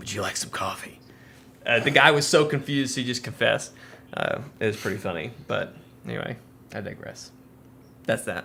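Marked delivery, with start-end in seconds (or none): 0.0-1.0 rough, gravelly, breathy whisper. Retelling a cartoon scene, imitating Batman's graveled voice. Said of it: "all graveled and hunched over".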